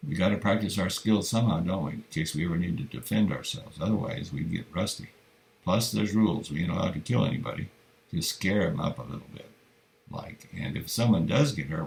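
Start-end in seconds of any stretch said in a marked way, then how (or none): none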